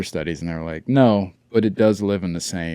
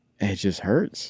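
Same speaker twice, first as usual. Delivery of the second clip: hurt and upset, quieter; 4 dB quieter than usual. Telling a listener about a heartbreak that still hurts, upset. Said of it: "You sound upset about this".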